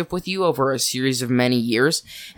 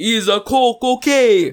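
very high, loud, awful put-on Italian accent; 10 semitones higher, 6 dB louder than usual. Acting out a friend's reply to a request, in an Italian accent. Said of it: "That was Italian".

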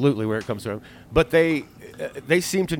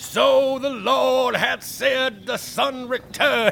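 hammy, scenery-chewing, very high, very slow drawn-out delivery; 11 semitones higher than usual. Acting out how the movie starts with him down in the sewers, scenery-chewing Bowery King impression. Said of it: "He's like chewing it up".

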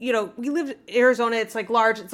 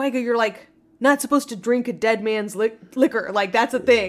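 ordinary talk, nothing marked

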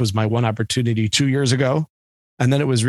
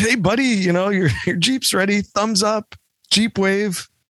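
mocking put-on voice, very high-pitched; 9 semitones higher than usual. Imitating the caller who said the Jeep is ready: imitating a Jeep guy. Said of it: "that guy sounded like a Jeep guy".

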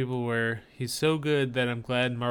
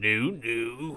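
teasing, mocking put-on delivery. Imitating the other speaker right after them: impression of the other speaker. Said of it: "That's my impression of you".

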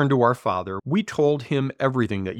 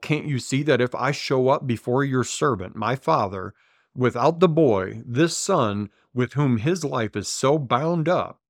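ordinary talk

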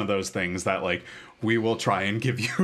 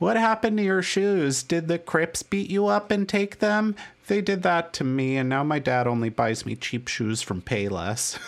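put-on small, high little-kid voice; 8 semitones higher than usual. Speaker quotes a favorite little kid character, little kid voice. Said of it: "little kid who talks like".

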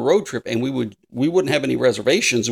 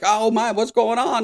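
sudden panicky, flustered exclamation, at a loss; 10 semitones higher than usual. Retelling reaching an unstaffed toll with trucks behind, acting out panicked words. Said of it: "We start panicking like".

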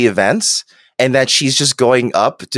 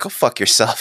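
put-on spiteful voice, quieter; 4 dB quieter than usual. Retelling what a character said, spiteful Picard voice. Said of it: "I like him being spiteful and being like".

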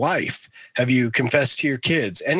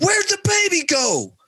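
put-on very high, full-lung child yell. Retelling how a two-year-old daughter reacted in a film: imitating a child shouting. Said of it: "starts shouting at the top of her lungs".

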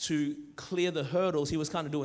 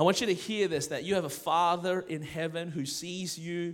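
usual speaking voice

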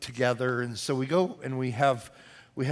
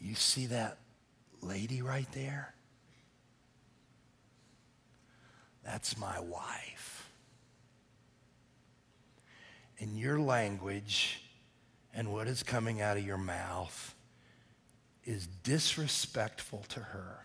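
put-on soft, gentle voice, lower and quieter; 3 semitones lower, 9 dB quieter than usual. Retelling how he warned a yelling diner at dinner: imitating speaking softly and gently. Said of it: "I very softly and gently said to him".

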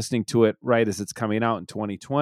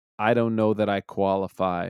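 mock-deadpan delivery, lower in pitch and quieter; 3 semitones lower, 4 dB quieter than usual. Recounting a remark Daniel made, imitating Daniel's dry delivery. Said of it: "Daniel very dryly says".

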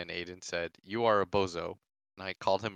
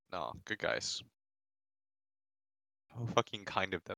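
quiet, words pushed through clenched teeth; 6 dB quieter than usual. Complimenting a team right after insulting it: through gritted teeth. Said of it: "he says through gritted teeth".

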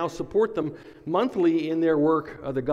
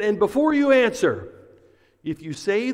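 mock sternest possible severe, authoritative voice; 5 semitones higher, 4 dB louder than usual. Retelling what a customs agent told Frank, mock-stern voice. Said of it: "he said in the most stern of voices".

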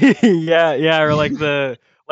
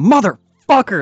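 very loud, furious, high-pitched all-out yell; 5 semitones higher, 3 dB louder than usual. A player's character finishes reading a letter, then gives a loud angry shout. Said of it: "very loudly and angrily just shout".

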